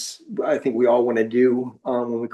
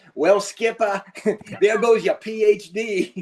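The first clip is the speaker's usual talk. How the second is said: put-on Massachusetts accent, pitched higher; 9 semitones higher than usual. Telling a story, the speaker quotes what the Master Chief said to him, Massachusetts accent. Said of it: "I tell this story with my Massachusetts accent".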